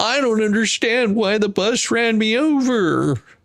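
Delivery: whimpering fake sob, high, slow, overly drawn out. Mocking someone who complains after being hit: mock crying. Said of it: "then crying".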